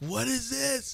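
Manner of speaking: very high, shrill put-on shrieking scream. Retelling watching a no call on a pass: imitating own screaming. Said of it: "screaming, like".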